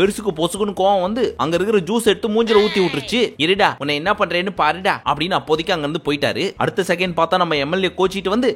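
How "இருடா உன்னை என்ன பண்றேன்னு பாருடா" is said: normal talking voice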